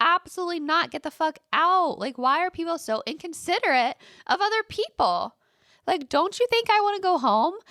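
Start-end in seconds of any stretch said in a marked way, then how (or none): 0.0-2.0 acted-out, half-yelled, mild yell. Retelling stopping a late gym member, imitating yelling. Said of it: "yelled at him".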